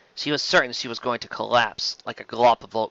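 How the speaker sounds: ordinary delivery, nothing marked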